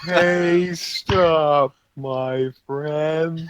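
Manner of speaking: every word stretched, slow-motion, like slowed tape. A player's prince character addresses a giant, talking in slow motion. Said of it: "begins talking in slow motion".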